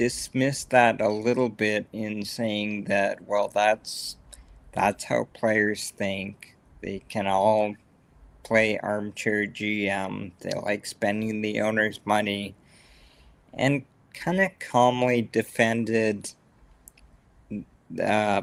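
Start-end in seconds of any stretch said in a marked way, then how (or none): none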